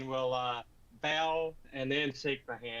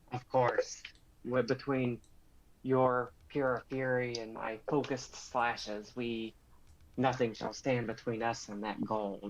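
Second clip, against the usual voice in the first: lizard-like creature voice. Speaking in character to an ally about winning gold: lizard-like accent. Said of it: "I'm trying to speak like a, uh, lizard".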